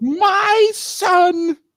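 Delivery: put-on outraged voice. Doing a parody of an outraged Facebook poster: mock outraged voice. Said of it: "that outraged voice".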